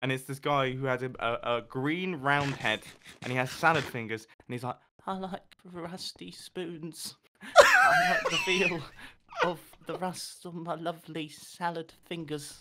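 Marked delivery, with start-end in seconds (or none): 5.1-12.6 slow, stretched, swooping, sing-song cartoon voice. Describing an internet cartoon, quoting its main character in Salad Fingers voice. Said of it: "that voice was amazing".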